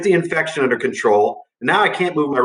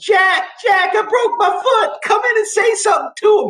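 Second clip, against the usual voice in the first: play-acted, very high, shrill screaming yell. Retelling how a coach with an injured foot yelled: imitating someone screaming. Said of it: "he's screaming".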